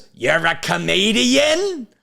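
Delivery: put-on high-pitched nerdy voice with New York accent.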